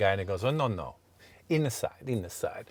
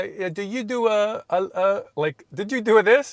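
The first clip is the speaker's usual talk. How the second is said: very high, slow, put-on Italian accent; 10 semitones higher, 4 dB louder than usual. Retelling what the guy at the rental desk in Italy said: Italian accent. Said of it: "I can do the Italian accent".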